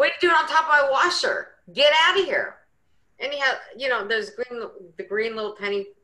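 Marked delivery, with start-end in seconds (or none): 0.0-2.6 high, loud, unkind-sounding yell. Retelling yelling at a mouse in her sleep: imitating her own yelling. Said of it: "And I'm yelling at a mouse".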